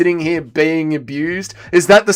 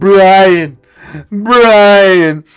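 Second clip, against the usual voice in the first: put-on campy, flamboyant voice, louder; 3 semitones higher, 5 dB louder than usual.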